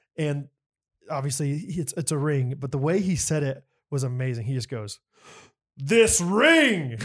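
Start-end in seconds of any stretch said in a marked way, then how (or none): 5.8-7.0 put-on regal tone, much higher pitch. Speaker imitates how a man said two words so grandly people laughed, mock-regal. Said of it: "so regal".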